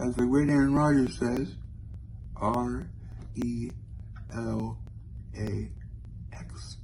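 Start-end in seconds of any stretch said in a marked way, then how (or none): 2.4-6.8 very slow, soft ASMR whisper, letter by letter. Spelling out relax letter by letter as an asmr impression, soft whispered letters. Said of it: "That was my impression of A S M R".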